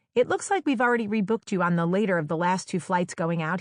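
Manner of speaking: usual speaking voice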